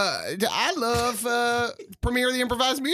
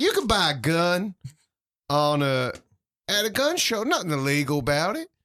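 put-on Texas accent; 4 semitones lower than usual. After listening to a clip of him, do one line in a David Koresh Texas accent.

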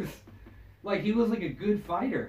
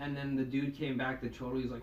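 ordinary delivery

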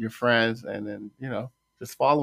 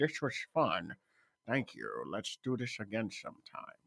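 put-on movie-star voice, pitch swooping all over; 10 dB quieter than usual. Redoing a quote as requested, in the Sean Connery voice. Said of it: "you gotta do in the Sean Connery voice".

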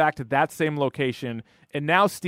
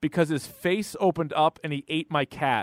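ordinary talk, nothing marked

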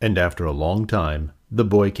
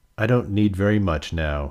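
plain

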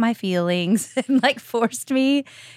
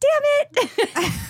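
put-on tiny child's voice, very high. Retelling what the speaker said as a small child after dropping a beer, little kid voice. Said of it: "In my little kid voice".

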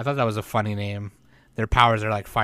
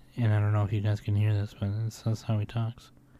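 quiet whispering; 4 dB quieter than usual. Describing a show character who whispers in person, imitating him: imitating his whisper. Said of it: "He whispers".

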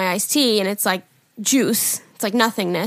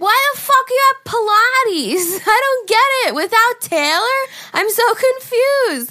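put-on very high, tipsy, befuddled, rambling drunk voice; 13 semitones higher, 4 dB louder than usual. Retelling a FaceTime call, imitating own drunk self. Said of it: "Do you like my drunk impression of myself?".

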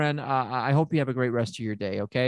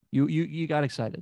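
ordinary delivery

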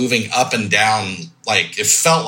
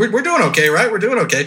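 mock steady, brave-sounding, much higher pitch; 10 semitones higher than usual. Speaker retells a man trying to be strong for everyone, imitating keeping it cool. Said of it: "He's trying to be strong for all of us".

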